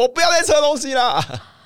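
put-on very high, protesting yell. Retelling running out of the costume room and yelling on the bed, retelling a yell. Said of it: "在床上大叫我说".

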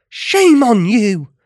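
forceful, loud, high-pitched exclamation. Rella, before everyone suddenly stops and looks at her: exclaiming. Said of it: "Rella exclaimed".

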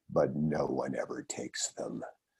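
dropped voice, very low, very quiet hushed murmur. Retelling what his mentor lawyer said on his first day at the firm, dropped voice. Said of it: "he dropped his voice and he said".

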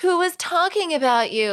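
put-on very high, naive child voice. Retelling what he said when everyone thought the remark was about him, like a child. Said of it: "like a child".

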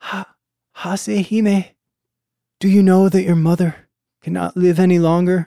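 weak, high, faltering, halting dying voice. Voicing a dying mother speaking to her daughter: dying voice. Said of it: "dying voice".

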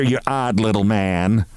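ordinary delivery, nothing marked

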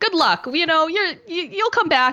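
high, mocking, cheery fan voice.

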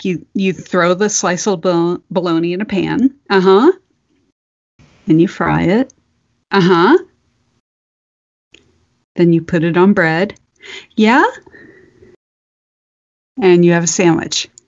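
mock-deadpan delivery. Retelling a mother giving her son a recipe by phone, imitating her completely deadpan. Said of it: "completely deadpan because she's used to her son".

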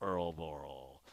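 very deep, dramatic announcer voice, pitch dropped low. Doing the voice a name must always be said in: John Facenda voice. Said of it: "in a John Facenda voice".

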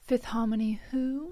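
put-on British accent. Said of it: "She's British".

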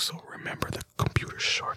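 hushed, breathy whisper. Recapping a joke's setup for listeners, whispering. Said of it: "Why am I whispering?".

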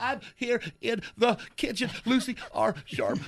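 speaking while crying, through tears. Awake at 4 a.m., [name] calls to his wife from the kitchen, crying while talking. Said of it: "Honey, are you crying?".

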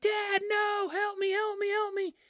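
mock very high, drawn-out child's scream. Retelling how a scared seven-year-old calls his dad: imitating a child screaming for help. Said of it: "He starts screaming for his dad".

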